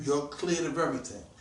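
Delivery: ordinary delivery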